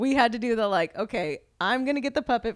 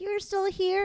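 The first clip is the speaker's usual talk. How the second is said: mock little girl's squeaky voice, higher; 9 semitones higher, 4 dB quieter than usual. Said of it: "squeaky voice".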